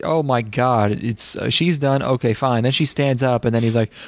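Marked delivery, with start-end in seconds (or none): none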